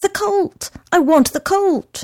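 very high-pitched blurt, nearly choking. Mario answers the frowning young fellow who asked what he wants, blurted, almost choking. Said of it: "blurted Mario, almost choking".

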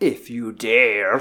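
creepy, spooky horror-trailer voice, scary and taunting. Closing a horror-movie podcast outro, add a teaser in a scary voice. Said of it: "scary voice".

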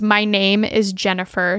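ordinary talk

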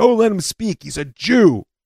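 high shout. Retelling what a fellow student shouted at a speaker, imitating someone shouting out. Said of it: "shouts out".

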